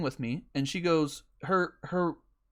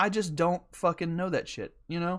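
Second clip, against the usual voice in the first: ordinary talk, nothing marked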